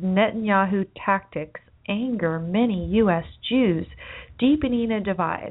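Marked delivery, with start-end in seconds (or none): none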